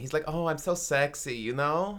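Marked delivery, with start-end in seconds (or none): 0.3-1.4 put-on campy voice, quieter. Describing a silly man, camp impression voice. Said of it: "You do sound like that".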